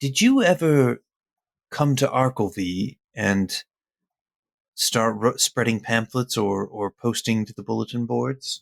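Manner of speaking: whispered, in a put-on character voice. Speaking in character to another character: whispering in character. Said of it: "I want to kinda whisper to him".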